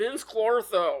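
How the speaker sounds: word belted out with heavy emphasis. Retelling how the character pronounces his name: imitating Rick Moranis as Vinz Clortho. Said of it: "he's like".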